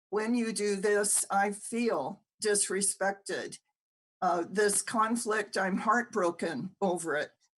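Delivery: ordinary delivery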